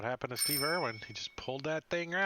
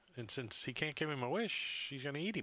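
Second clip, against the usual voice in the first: ordinary delivery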